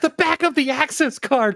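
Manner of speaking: imitated screaming. Retelling yelling a game hint at a phone: retelling own screaming. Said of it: "I was screaming it".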